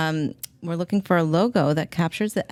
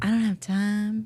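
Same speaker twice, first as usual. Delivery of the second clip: put-on, slow, drawn-out Oklahoma accent drawl; 4 semitones higher than usual. Retelling what a podcast host said, imitating an Oklahoma accent. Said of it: "in her Oklahoma accent".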